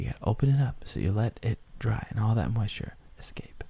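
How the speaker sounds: fast, whispered aside. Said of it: "Why did you have to whisper it?".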